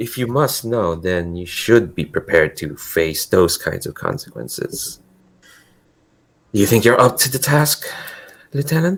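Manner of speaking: scheming, in-on-a-secret, conspiratorial tone. A game narrator voices a woman addressing the lieutenant: conspiratorial tone. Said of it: "this like conspiratorial tone in her voice".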